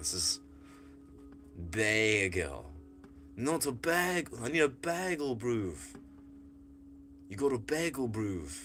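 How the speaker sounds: Australian accent with "bagel" leaned on and drawn out. Speaker showing Amy their newly approved pronunciation of bagel, in an Australian accent. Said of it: "I'm Australian now".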